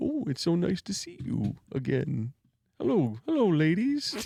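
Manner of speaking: soft, hushed voice, under the breath. Describing a trailer, doing Charlie Hunnam's Ed Gein voice. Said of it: "he talks like this".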